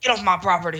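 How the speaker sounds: put-on grumpy, cranky old man voice. Joining a bit imagining a cartoon character: Ray as a grumpy old man. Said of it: "a grumpy old man".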